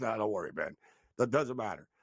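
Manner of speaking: mock deadpan delivery, low and dry. Retelling how a player answered about tonight's game: imitating a deadpan delivery. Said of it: "deadpan, the way he said".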